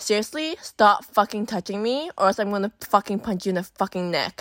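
mock dead-serious threatening tone. Retelling telling a man on the highway to stop touching them, dead serious. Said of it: "he finally fucking figured out that I was being serious".

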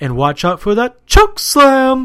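very loud, high, belting ring announcer boom. Retelling a wrestler getting a booking call: Howard Finkel announcer voice. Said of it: "He would stay in his announcer voice".

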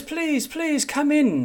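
very high, showy, flamboyant, theatrical delivery. Narrating a character who invites a visitor in, with a flamboyant grinning welcome. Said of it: "with a flamboyant grin".

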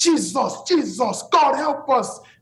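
put-on drawn-out high scream in a thick Nigerian accent. Retelling waking up to people calling on god in a nigerian village, imitating screaming in thick nigerian accent. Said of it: "Thick Nigerian accent screaming".

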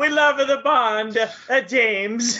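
put-on Italian accent. Joking about the James Bond release weekend, in a put-on Italian accent. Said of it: "Is that Italian?".

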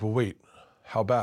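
ordinary delivery

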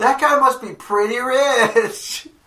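shrill, high, stretched-out yell. Shouting across an auction crowd during bidding: yelling in character. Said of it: "I just yell".

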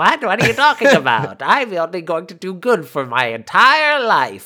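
sinister skeleton villain voice. Retelling what Paul answered the group, imitating Paul's evil voice. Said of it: "you got a real evil voice that would fit a skeleton man".

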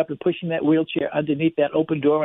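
ordinary delivery

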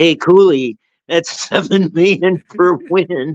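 loud heckling, jeering yell. Retelling a student heckling a coach: imitating someone yelling. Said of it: "a student yelling at him".

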